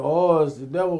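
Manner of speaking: ordinary talk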